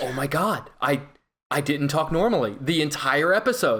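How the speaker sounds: ordinary delivery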